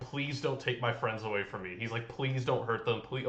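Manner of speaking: put-on desperate begging voice. Retelling a character's fearful thoughts: imitating someone begging. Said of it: "almost just begging the universe".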